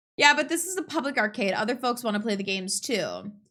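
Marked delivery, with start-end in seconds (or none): none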